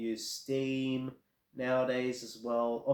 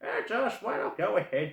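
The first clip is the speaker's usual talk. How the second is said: high, put-on old lady voice; 8 semitones higher, 4 dB louder than usual. Recalling asking their mum to buy a game, voicing her reply: put-on old lady voice. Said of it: "I can't do like my old lady voice right now".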